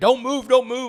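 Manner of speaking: shrill, very high, loud screaming. Retelling an arrest, a cop with a rifle over him: imitating a cop screaming. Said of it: "He's screaming".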